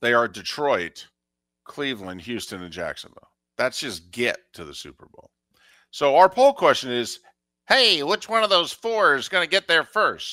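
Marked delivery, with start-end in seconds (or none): 7.7-10.3 silly, mocking, self-teasing put-on voice. Announcing a poll question while making fun of himself: mocking put-on voice. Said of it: "me using that voice".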